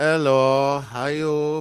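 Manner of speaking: Chinese-accented voice. A guest joining the show greets the host, in a chinese accent. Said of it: "best Chinese accent I think I've ever heard".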